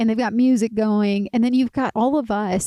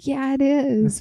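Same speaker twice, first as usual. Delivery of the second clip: put-on super chill, very relaxed voice, higher pitch; 3 semitones higher than usual. Retelling how Tohi lay in his hammock after finishing the trail: imitating Tohi, super chill. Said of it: "super chill".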